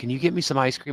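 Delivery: put-on small, childlike little-girl voice. Retelling how his mom asked for ice cream at night: imitating a little girl voice. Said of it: "she'd talk like a little girl".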